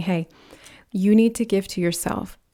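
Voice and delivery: plain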